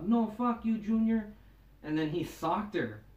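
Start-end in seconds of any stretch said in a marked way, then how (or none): 0.1-1.3 put-on high, drunken woman's yell. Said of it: "this chick was yelling 'cause, like, she was drunk".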